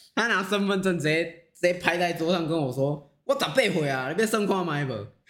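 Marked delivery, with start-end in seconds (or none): 3.3-5.1 put-on fierce, aggressive voice. Retelling a young customer slapping down his id: imitating a fierce customer. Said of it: "你干嘛那么凶啊？".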